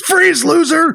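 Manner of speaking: play-acted, very high shrieked scream. Retelling a movie scene where the cop draws his gun: imitating a cop screaming. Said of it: "the cop whips out his gun and screams".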